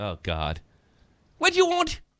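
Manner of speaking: very high, animated, swooping up-and-down sing-song. Showing how another speaker says it: imitating Mister Irish. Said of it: "The way he does it, it's just like".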